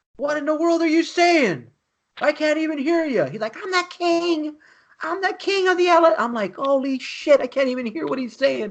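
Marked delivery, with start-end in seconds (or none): 3.6-6.2 mock child screaming very loudly, high-pitched. Speaker retells a kid shouting words he could barely hear; imitating a kid screaming. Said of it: "he's screaming at the top of his lungs".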